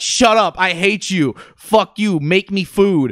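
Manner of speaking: high, mild yell. Retelling a girl on video yelling off camera at her mom; imitating someone yelling. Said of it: "She's just yelling off camera at her mom".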